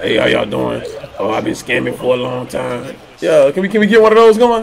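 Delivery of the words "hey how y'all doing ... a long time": soft, fake, voice-changer-like disguised voice. Acting out a masked interview guest: put-on disguised interview voice. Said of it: "put one of them little masks on with the voice".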